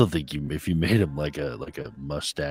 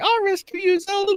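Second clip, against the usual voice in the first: really high, squeaky, very high-pitched voice; 7 dB louder than usual. Showing how not to voice a hero line: really high-pitched voice. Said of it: "in a really high pitch".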